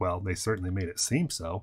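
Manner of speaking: mock very quiet, low, hushed, flat deadpan. Quoting how the other speaker said it earlier, imitating a deadpan delivery. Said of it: "the way you said it so deadpan".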